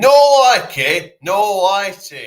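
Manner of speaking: very high, booming, drawn-out delivery. Talking about a TV show's host, doing an impression of him: Paddy McGuinness impression. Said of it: "I'll do an impression of him".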